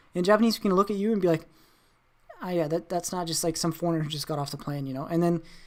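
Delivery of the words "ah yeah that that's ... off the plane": ordinary talk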